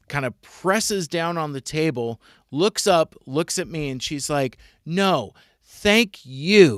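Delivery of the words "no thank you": almost aggressive delivery, the word "you" drawn out. Retelling a woman's refusal to the speaker, imitating an aggressive thank-you. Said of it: "And it was almost aggressive".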